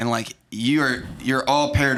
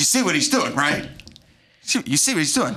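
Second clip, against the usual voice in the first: put-on infuriated voice, higher pitch; 4 semitones higher than usual. Retelling a movie scene where a character grows infuriated: imitating infuriated Stanley. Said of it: "he's infuriated".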